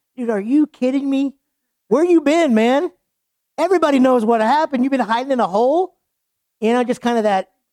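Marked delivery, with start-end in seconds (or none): 0.2-6.0 high, slightly snarky sarcastic tone. Speaker demonstrates the tone they would take: mock-snarky tone. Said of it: "I just get like a little snarky tone".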